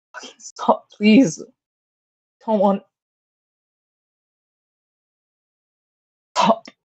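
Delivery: crying a little, tearful, panting between words. A woman going down to the ground, crying a little and panting. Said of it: "starts panting and just starts crying a little".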